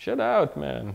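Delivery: comical, put-on Indian accent played for laughs. Quoting a mentor who lived there twenty years, in a comical pseudo-Indian accent. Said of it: "in a fairly comical pseudo-Indian accent".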